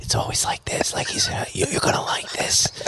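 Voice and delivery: soft, voiceless, secretive whisper. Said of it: "he has to whisper to me".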